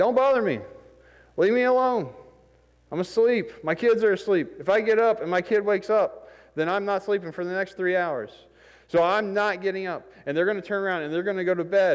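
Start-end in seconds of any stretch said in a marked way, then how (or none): 0.0-10.1 mock hollering, high yelled voice. Retelling a parable where a woken neighbor refuses at the door: imitating a neighbor yelling. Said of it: "he yells at you".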